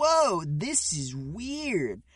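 dumb-sounding 80s cartoon-style voice. Mimicking how everybody talks in the episode, dumb 80s cartoon voice. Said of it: "very 80s cartoon".

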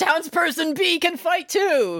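very high, drawn-out put-on scream. Recapping a scene where a girl at the train station screams to her mom: imitating Yachi's scream. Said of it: "she just screams like she's going Super Saiyan".

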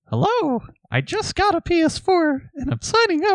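tiny, very high, squeaky mouse voice. Told to give each person a different voice, speaker does a little mouse voice. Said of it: "That's the little mouse".

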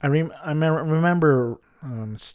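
slow, halting, stumbling stammer with false starts. Speaker trying to recall an old radio segment, stammering. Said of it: "stammering stuttering".

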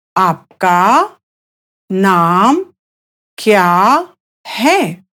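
very slow, drawn-out, deliberate pace. A speaker teaching Hindi repeats the question for a learner: very slow. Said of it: "I'll say that again slowly".

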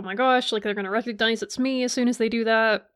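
ordinary talk, nothing marked

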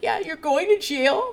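high, weepy, tearful crying voice. Retelling what a crying woman said on the show: imitating someone crying. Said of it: "She's, like, crying".

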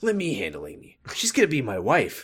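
soft, swooping, sing-song character voice. Recapping a show scene, doing a little bit of a Ricky voice. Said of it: "I'm doing a little bit of a Ricky George voice".

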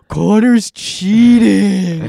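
very loud, top-of-lungs shout. Retelling what a girl yelled out in class, retelling a top-of-lungs shout. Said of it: "top of her lungs".

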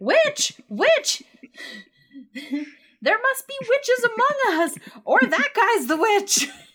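very loud, very high, shrill, booming, swooping shout. Voicing a villager who sees a book floating in the air: villager shouting. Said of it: "one of them shouts".

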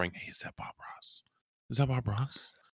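hushed whisper, under the breath. Retelling what people said when walking by: imitating people whispering. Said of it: "they would be whispering".

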